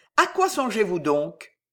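ordinary talk

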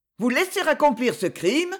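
high, indignant outcry. She confronts the prince, crying out in indignation. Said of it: "dit-elle dans un cri d'indignation".

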